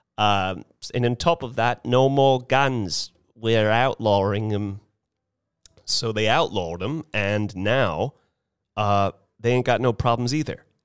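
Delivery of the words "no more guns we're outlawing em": put-on terrible, unconvincing New Zealand accent. Quoting a national leader banning guns: terrible new zealand accent. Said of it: "All I know about New Zealand accent".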